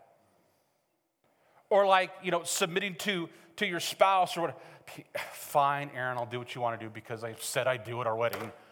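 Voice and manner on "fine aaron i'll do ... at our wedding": low, soft, fast, resentful, grudging delivery. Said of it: "Whole lot of silence in that one".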